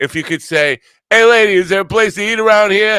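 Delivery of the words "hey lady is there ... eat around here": very loud, shrill, booming Brooklyn accent. Advising a listener how to ask for a place to eat, in a Brooklyn accent. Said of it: "If you could do a Brooklyn accent".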